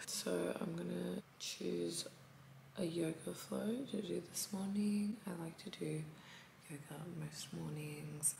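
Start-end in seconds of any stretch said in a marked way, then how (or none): 6.7-8.4 soft whisper. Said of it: "that's why I'm whispering".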